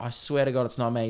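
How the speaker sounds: ordinary delivery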